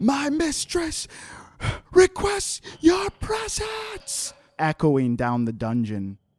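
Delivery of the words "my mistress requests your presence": panicked scream, much higher. Narrating a dungeon scene, a familiar woman screams down into the prison; panicked screaming. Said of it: "She's just screaming".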